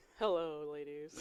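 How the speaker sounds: pitched low, heavily charming delivery. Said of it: "his like Rico Suave voice".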